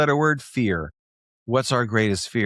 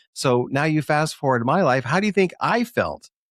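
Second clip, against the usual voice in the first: ordinary talk, nothing marked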